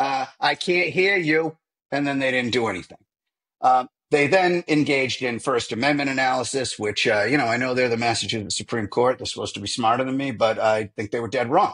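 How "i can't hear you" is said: slow, drawn-out mock Boston accent. Mimicking the Massachusetts Supreme Court refusing the motion, in a put-on Boston accent. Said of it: "with a Boston accent".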